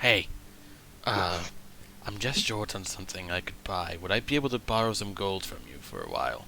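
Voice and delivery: low, hushed half-whisper with no voice. Game master voicing Moonsig, half-whispering to Nemo: Moonsig half-whispering to Nemo. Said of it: "Moonsig's going to whisper to Nemo".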